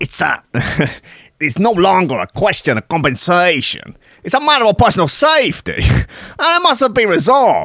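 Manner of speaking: Italian-American accented speech. Deciding they could do American-Italian, delivering a line in an Italian-American accent. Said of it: "we could do American-Italian".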